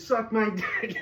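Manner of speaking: put-on high-pitched scream, yelled out. Retelling screaming a rude line at a man following them: imitating own scream. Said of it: "And I screamed that".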